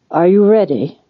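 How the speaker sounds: words croaked out. Narrating a story, voicing a man hesitating in a tent, croaking. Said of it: "he croaked".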